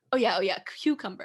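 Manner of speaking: put-on heavy Spanish accent. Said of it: "a very heavy Spanish accent".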